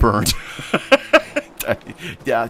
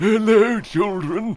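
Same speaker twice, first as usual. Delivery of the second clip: put-on very high-pitched old grandfather voice; 11 semitones higher than usual. Showing off a voice he says he can do; grandpa voice. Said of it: "I can do a grandpa voice".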